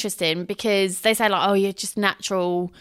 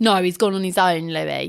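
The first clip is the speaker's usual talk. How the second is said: ironic, sarcastic, jabbing tone. Retelling a museum moment, answering Louis's question, being sarcastic. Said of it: "Like being sarcastic".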